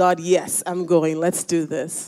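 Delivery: ordinary delivery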